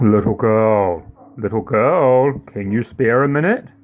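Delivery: put-on deep, smooth, silky voice, "girl" drawn out. Narrator reading a fairy tale, an unseen voice calls to the girl, in a deep silky voice. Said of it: "a deep, silky voice calling".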